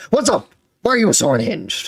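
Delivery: heated, high-pitched, charging delivery. Imitating how Keemstar comes into every conversation: imitating Keemstar coming in hot. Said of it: "how hot Keemstar comes into".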